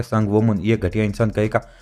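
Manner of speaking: plain reading voice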